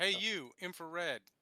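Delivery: loud shouting, yelling. A player character calls over to a citizen of Alpha Complex, yelling. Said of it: "I'm gonna yell at this guy".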